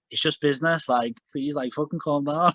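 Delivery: ordinary talk, nothing marked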